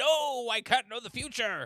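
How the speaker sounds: very high, very loud, slow, drawn-out cry. Acting out a refusal to read a note from the past: Doc Brown voice. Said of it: "That was my Doc Brown impression".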